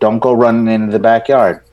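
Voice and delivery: ordinary delivery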